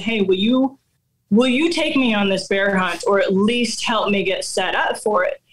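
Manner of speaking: normal talking voice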